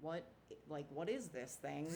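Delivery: ordinary delivery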